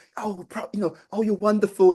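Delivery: high, soft, fluffy, gushing tone. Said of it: "it's not all kind of soft and fluffy".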